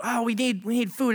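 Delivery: grumbling tone. Retelling how the people God fed started complaining: mock complaining. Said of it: "they start complaining".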